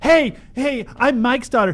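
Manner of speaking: mock, high, loud, chirpy tone.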